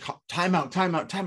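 high, stammered, urgent, repeated yell. Retelling watching the game and wanting a timeout: retelling a yell. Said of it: "I was yelling".

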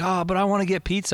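mock high-pitched kid voice, yelling loudly. Retelling what one of the kids always yells: imitating Cassis yelling. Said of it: "Cassis always yells".

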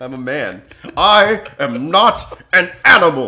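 very loud, slow, bellowing character voice. Quoting a line mid-conversation, Elephant Man voice. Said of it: "you did the good Elephant Man voice".

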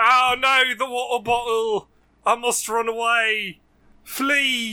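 put-on British accent. Playing a joke character fleeing a water bottle: put-on British accent. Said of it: "These fucking Brits".

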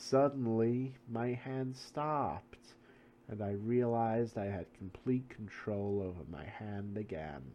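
talking slowly. Reading aloud a quoted interview response about a pen: talking slowly. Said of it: "Why does she talk so slow?".

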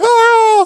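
very high, loud panicked scream. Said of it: "and you're like".

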